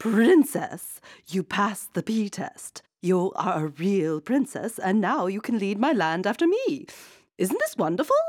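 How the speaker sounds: excited, exclaiming storybook queen voice. The queen speaks to the princess, exclaiming. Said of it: "exclaimed the queen".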